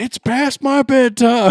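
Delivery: mock child shouting. A parent retells what his young son shouted after a roller coaster ride, imitating a kid shouting. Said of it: "And he shouted".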